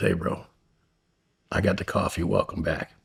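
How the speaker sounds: hushed, soft half-whisper, very close up. Recounting a guy walking up behind him at Target, retelling a stranger's half-whisper. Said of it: "he just whispers in my ear".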